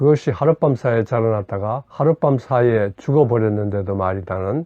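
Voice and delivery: ordinary talk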